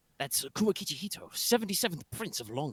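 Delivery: discreet hushed aside. Watching a street procession, Hemlock speaks in a low voice. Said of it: "says in a low voice".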